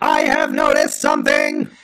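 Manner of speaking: very high-pitched put-on creature voice. Acting a one act play with a co-host: Dalek voice. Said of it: "I'll be the Dalek".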